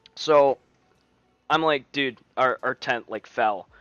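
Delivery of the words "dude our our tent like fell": usual speaking voice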